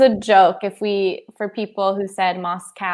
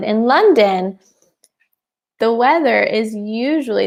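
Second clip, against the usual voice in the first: normal talking voice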